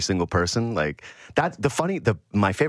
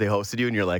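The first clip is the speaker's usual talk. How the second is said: usual speaking voice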